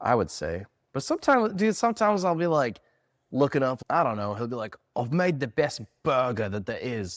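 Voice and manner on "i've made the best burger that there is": put-on, imitated Australian accent. Retelling what a recipe writer says about his burger; Australian accent. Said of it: "That's an Australian accent".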